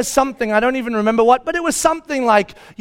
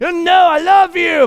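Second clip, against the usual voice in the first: mock-angry tone, higher and slower; 7 semitones higher than usual. Retelling holding her child who wants to be let go, replaying saying it mad. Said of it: "But I'm saying it mad".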